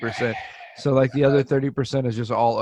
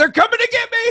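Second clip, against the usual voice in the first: high, loud mock panic. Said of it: "I'm like".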